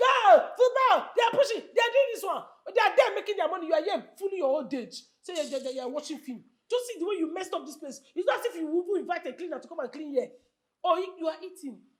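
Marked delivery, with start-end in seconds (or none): 0.0-3.7 mock loud, high shouting. Retelling how the husband shouts at football on TV: imitating husband shouting at football. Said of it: "Every day you're here shouting".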